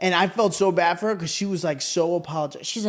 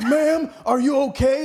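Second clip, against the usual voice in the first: mock hollering in a high, raised voice; 8 semitones higher, 3 dB louder than usual. Retelling an EMT asking if the speaker is okay: imitating someone yelling. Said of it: "and he's yelling at me".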